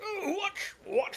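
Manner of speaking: very high, shrill, yelling monster voice. A Minotaur yells at a player who took a chunk out of the bar: yelling Minotaur voice. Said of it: "The Minotaur yells behind you".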